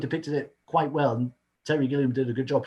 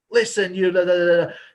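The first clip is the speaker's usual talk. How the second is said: put-on shout, higher pitched and louder; 3 semitones higher, 6 dB louder than usual. Discussing a scene, speaker acts out Duke's outburst: Duke's shout, retold. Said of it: "he actually shouts out like".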